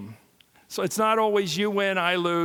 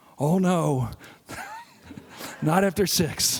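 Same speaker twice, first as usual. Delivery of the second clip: put-on chuckling elderly statesman voice, warm, with laughter. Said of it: "here's what Reagan said".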